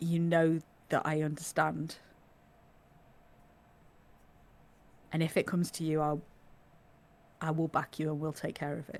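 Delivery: quiet, soft, low voice. A player speaking in character to Esmeralda during a game, said quietly. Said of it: "I'm gonna say it like quietly".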